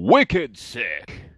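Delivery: very loud, high-pitched game announcer bellow. Recalling the announcer from the Unreal games: Unreal announcer voice. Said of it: "I enjoyed the guy from one of the Unreal games".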